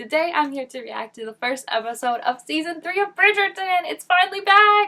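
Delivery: many words run together in one breath. Introducing a reaction to a new Bridgerton episode, lots of words without breathing. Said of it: "a lot of words without actually breathing".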